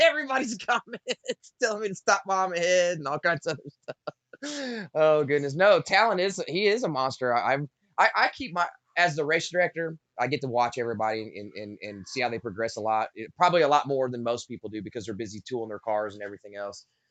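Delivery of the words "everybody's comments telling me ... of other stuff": high voice, words broken up by laughter. Explaining why they are still laughing at viewers' comments, laughing while talking. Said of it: "What are you laughing at?".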